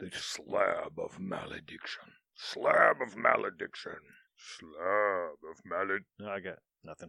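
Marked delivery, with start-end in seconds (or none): 0.0-6.1 rough, gruff, slow dwarf voice, one word drawn out. Trying out a game artifact's name, the speaker says it in a dwarven tone. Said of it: "You have to say it in a dwarven tone".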